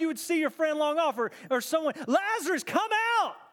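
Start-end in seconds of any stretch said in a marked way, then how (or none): 2.1-3.3 mock calling out, loud and high-pitched. Retelling a Scripture scene, calling out to a friend: loud call. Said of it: "He cries out in a loud voice".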